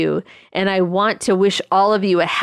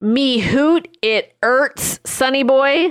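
put-on Scottish brogue on "me hoot", pitched up; 6 semitones higher than usual. Repeating a line from a letter just read aloud, in a scottish accent. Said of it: "Was taken as a Scottish accent version".

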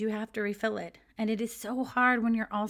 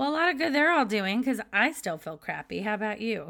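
slightly sarcastic tone; 4 dB louder than usual. Commenting on all the advice about staying positive: a bit sarcastic. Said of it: "I realize that sounded a bit sarcastic".

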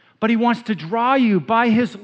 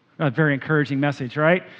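ordinary delivery

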